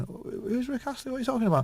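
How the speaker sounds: mock dazed, baffled stoner voice, very high-pitched. Retelling how the stoned band answered a question: imitating stoned bandmates. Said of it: "stoned, going".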